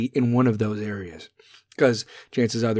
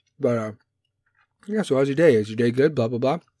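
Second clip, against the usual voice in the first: speaking while chewing, mouth full of food. Showing how to chat with your kids, talking while chewing. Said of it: "So now I'm chewing on my podcast".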